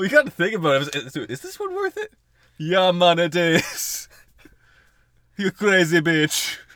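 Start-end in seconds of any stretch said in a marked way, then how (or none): 2.6-6.6 put-on Jamaican accent, higher, louder. Joking that she has to speak Jamaican: Jamaican accent. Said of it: "speak, like, uh, Jamaican".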